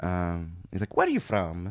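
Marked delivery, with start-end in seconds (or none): 1.0-1.7 put-on comically clichéd Italian accent. Retelling what an italian man said on meeting, comically stereotypical italian accent. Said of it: "comically stereotypical accent".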